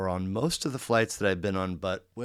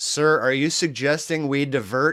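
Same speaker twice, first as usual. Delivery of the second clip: loud, raised, pitched-up delivery; 6 semitones higher, 7 dB louder than usual. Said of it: "so loud 'cause it's such a small plane".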